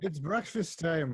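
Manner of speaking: deliberate, loud, high shout. Calling the others to breakfast in a scene: shouting intentionally loud. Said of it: "I'm shouting, like, intentionally loud".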